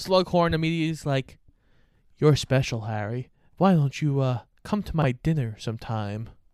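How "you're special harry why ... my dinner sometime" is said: put-on creepy tone with suggestive sexual undertone. Acting out a character's dinner invitation: mock creepy, sexual undertone. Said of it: "why did you say that with such a creepily, like, sexual back undertone?".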